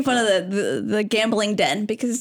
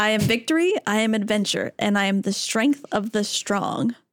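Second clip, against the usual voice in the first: plain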